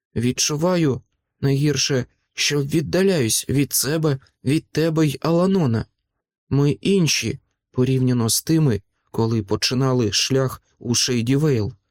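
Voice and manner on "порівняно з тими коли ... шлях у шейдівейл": ordinary delivery, nothing marked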